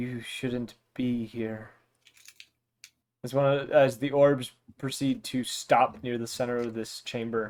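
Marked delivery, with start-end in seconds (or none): 0.0-1.7 faint, soft, barely audible voice. A narrator describing a chamber voices an unseen speaker in a faint voice. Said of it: "a faint voice say".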